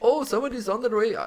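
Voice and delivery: put-on Indian accent. Retelling a phone call from a gate: imitating an Indian accent. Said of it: "like, an Indian accent".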